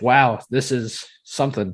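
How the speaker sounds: ordinary talk, nothing marked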